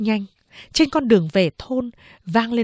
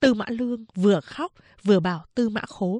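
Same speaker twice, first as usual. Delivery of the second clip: plain reading voice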